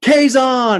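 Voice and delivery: loud high-pitched shout.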